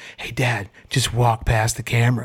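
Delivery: stage-whispered call. Retelling how he whispered out the window: imitating a whisper. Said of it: "he whispers out the window".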